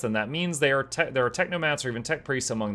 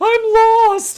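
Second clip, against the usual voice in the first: imitated scream, much higher, louder; 12 dB louder than usual. Describing a video of ants, voicing the lost ant, acting out an ant screaming. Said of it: "And just starts screaming".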